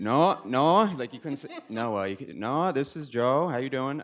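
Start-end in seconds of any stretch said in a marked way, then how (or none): 2.4-4.0 put-on rough-edged, harsh Maine accent. Retelling a phone call he got as a high school senior, Joe Woodhead's harsh Maine accent. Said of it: "he had a pretty harsh Maine accent".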